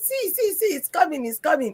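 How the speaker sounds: acted, frantic, alarmed, high panicked scream with repeating. Retelling a first driving lesson as a truck approaches: imitating own panicked screaming. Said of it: "I started screaming".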